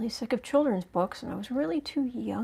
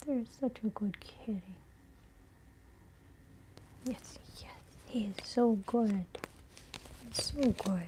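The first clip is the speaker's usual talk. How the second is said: gentle, soft-spoken, hushed cooing; 6 dB quieter than usual. Speaker praising their cat during a card reading, soft voice. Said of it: "I'm trying to do it in a soft voice".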